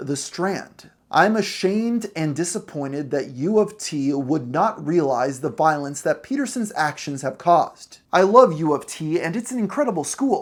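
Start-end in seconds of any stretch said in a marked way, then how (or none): none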